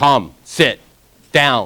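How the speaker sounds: firm, even, calm and assertive commanding tone. Demonstrating how they call them back, in a commanding tone. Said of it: "I call them in a command".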